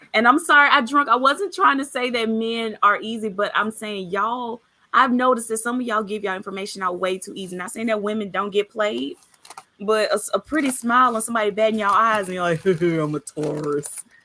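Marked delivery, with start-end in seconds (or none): 12.6-13.8 timid, fearful cartoon lion character voice. Imitating a man answering a pretty smile: sounding like the Cowardly Lion. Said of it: "You sound like the Cowardly Lion".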